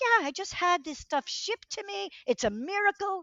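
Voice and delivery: put-on very high-pitched Irish accent, old man voice. Quoting a ninety-three-year-old father from Ireland: Irish accent. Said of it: "I have to do the Irish accent".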